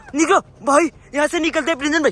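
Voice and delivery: frantic, alarmed loud yell.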